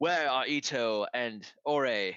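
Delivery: fake English accent, loud and slow. Voicing a wary warrior asking about missing companions: put-on English accent. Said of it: "in an English voice that's not his".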